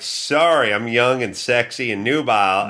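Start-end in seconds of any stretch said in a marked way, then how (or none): none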